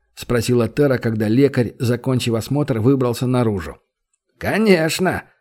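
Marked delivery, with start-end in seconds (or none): 4.3-5.2 smirking, wry grunt, higher pitch. The healer answers Tera's question whether he can help, with a smirking hmph. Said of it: "хмыкнул тот".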